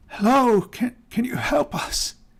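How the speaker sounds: feeble, weak, high-pitched voice. Game master voicing someone on a deck calling to the approaching party, weak voice. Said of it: "you hear a weak voice call out".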